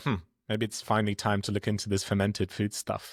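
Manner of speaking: plain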